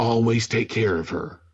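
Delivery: mock whisper. Retelling a movie scene where Thor leans over to Mjolnir: imitating Thor whispering. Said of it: "he leans over and he whispers, he goes".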